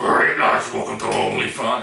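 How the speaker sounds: loud, intimidating, gruff, growling voice.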